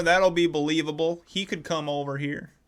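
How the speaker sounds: put-on heavily laid-on, thick country accent. Acting out what she thought about blaming the nerdy kid, really country accent. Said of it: "I'm imitating her with like a really country ass accent".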